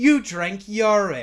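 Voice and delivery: very loud, high-pitched, bad put-on British accent. Speaker quoting a woman from a television moment, in a bad british accent. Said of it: "just like the British accent".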